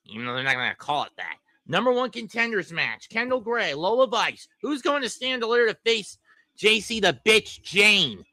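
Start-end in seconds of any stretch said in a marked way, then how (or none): 6.6-8.2 strong, hard stress on the word "bitch". Previewing a number one contenders match: emphasis on 'bitch'. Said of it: "I put emphasis on calling her a bitch".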